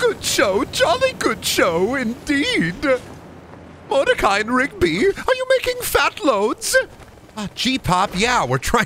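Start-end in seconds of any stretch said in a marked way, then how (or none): 0.0-6.8 put-on cartoon character voice. Answering what Pops sounds like: Pops voice. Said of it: "What do you sound like, Pops?".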